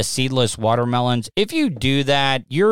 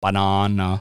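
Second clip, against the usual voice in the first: British pronunciation of banana; 6 semitones lower than usual. Showing the way the Brits say banana, in a British accent. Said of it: "The way the Brits say banana".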